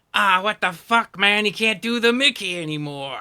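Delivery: very loud, annoyed, griping creature voice. Voicing the madcaps on the wall complaining down at the players: madcaps complaining in character. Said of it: "They look down and go".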